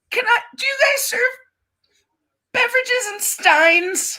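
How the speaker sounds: very high, tearful, sobbing crying speech. Asking the server at a restaurant a question, crying while talking. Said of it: "Can you stop crying for a goddamn second?".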